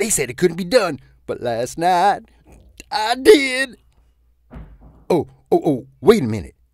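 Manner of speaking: bubbling-over, excited, eager delivery.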